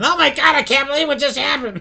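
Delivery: very high, loud, shocked and astonished scream. Retelling a father coming out of the bedroom, imitating someone screaming. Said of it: "my dad come out of the bedroom screaming".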